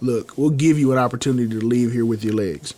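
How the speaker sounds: dead calm, cold serial-killer voice. Retelling a wrestling promo where Ole threatens Sting, imitate his calm serial-killer tone. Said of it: "in like the most calm serial killer tone".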